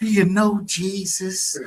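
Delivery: high, slow twangy voice, twang on "Jesus".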